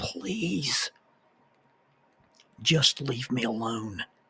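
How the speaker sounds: put-on pitiful, soft begging tone. Retelling a voice from under the door, imitating a pitiful, pleading voice. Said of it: "this pitiful, pleading voice".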